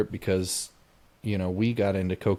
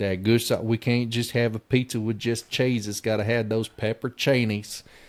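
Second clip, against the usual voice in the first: put-on deep, heavy Southern accent; 3 semitones higher than usual. Retelling an overheard couple ordering pizza, in a put-on deep southern accent. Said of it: "deep Southern accents".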